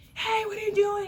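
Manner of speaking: rude, high-pitched, loud confrontational yell.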